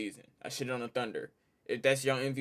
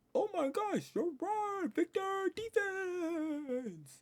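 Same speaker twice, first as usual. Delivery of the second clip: very high-pitched, mock awed fan voice, gushing.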